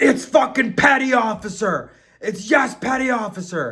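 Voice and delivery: barking, loud, drawn-out drill yell. Retelling a petty officer shouting at everyone on the bus, imitating someone yelling. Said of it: "he starts yelling at me".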